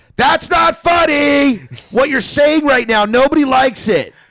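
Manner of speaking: very high, very loud jeering yell. Retelling heckling a drunk comedian on stage: imitating own past heckling. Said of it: "I commenced in heckling him so fucking bad".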